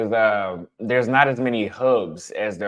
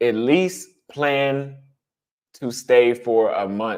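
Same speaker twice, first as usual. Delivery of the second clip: slow, drawn-out stress on "least" and "stay". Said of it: "repeats advice slowly for emphasis".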